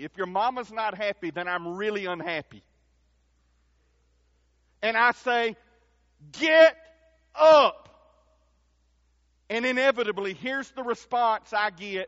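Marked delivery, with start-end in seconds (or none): 6.3-7.9 put-on unfriendly tone, very loud and high. A parent acts out what they say to a child, in a not-so-nice voice. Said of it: "in a not so nice voice".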